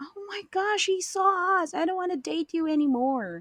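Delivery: put-on high, shrieking scream, all alarm. Retelling how a girl screamed on being seen: imitating someone screaming. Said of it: "she was screaming".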